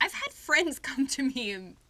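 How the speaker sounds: giggling through words. Telling a story to another speaker, laughing while talking. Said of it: "I'm sorry, I'm laughing".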